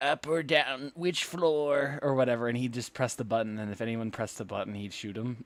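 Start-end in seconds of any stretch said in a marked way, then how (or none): 0.0-2.0 goofy, very slow, drawn-out, high, loud voice. Retelling a bit where Buck stands in the elevator: Buck's signature funny voice. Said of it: "in his signature funny voice".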